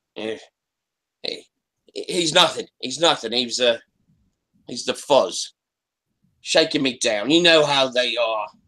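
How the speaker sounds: clumsy, bad, fake London punk accent. Speaking in character as a london punk, bad london punk accent. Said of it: "has a bad English accent because he's pretending to be a London punk".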